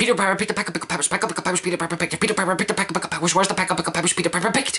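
rapid-fire delivery. Saying the tongue twister once more at top speed, warp speed, very fast. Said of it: "Warp speed".

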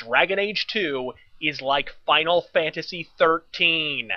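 slow, deliberate, weighty delivery, every word stressed. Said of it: "as I repeat unequivocally the following statement".

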